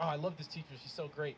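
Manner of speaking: plain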